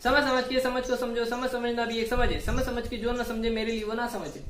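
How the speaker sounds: rattled off very fast.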